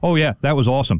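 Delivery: put-on deadpan delivery. Speaker retells OG answering Brunson as the crowd goes wild, OG's deadpan, retold. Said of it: "very deadpan".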